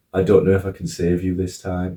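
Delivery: normal talking voice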